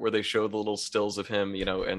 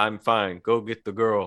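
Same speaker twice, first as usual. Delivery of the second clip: very chill, relaxed, unbothered, laid-back calm delivery; 3 dB louder than usual. Retelling a scene where the character fell into a hole, imitating Weehawk's very chill delivery. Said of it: "very chill".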